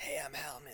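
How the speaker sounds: raspy, rasping, near-death dying voice. Voicing the character Hal greeting the players: raspy Hal voice. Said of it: "it was kind of raspy last time".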